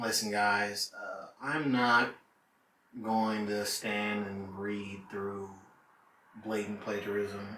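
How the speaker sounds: play-acted very slow, low, dead-level monotone drone. Imitating a woman's words before she sets a paper on fire: flat monotone voice. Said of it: "most monotone voice ever".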